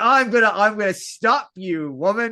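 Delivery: slow, trying-hard, mock tough-talk delivery. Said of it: "attempt to look tough".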